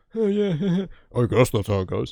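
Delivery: mocking imitation of a deep voice. Retelling how the boys mimicked a friend: mocking imitation of a deep voice. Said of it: "they mimicked him saying the same thing".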